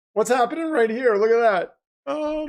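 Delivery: voice cracking, breaking and splitting on words. Streamer reacting to the late games, voice cracking. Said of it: "my voice is cracking already".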